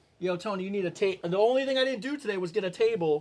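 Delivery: normal talking voice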